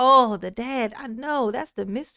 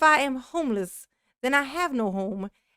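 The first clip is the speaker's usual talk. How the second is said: ordinary delivery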